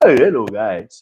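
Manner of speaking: mock exaggerated, put-on delivery. Telling the other speaker to talk normal, mimicking their greeting: mocking an exaggerated 'hello guys'. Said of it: "Talk normal now".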